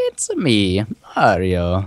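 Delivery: swooping, bouncing cartoon Italian accent. While playing a game together, one player shows off: Mario impression. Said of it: "Mario impression".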